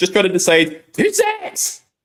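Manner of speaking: deliberately awful put-on voice, high and swooping. Reading out a pick message in a horrendous Stacey impression. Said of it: "my horrendous impression of Stacey".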